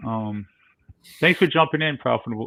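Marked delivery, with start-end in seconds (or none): 1.2-2.5 raised, high, projected calling voice. Speaker thanks someone for jumping in before signing off, in a raised voice. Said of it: "I'm raising my voice".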